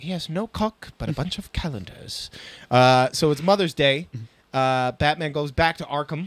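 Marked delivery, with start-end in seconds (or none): 0.0-2.3 breathy, near-whispered, barely whispered voice. Reading a Calendar Man line from a comic: Varys voice. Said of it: "I read him in Varys' voice".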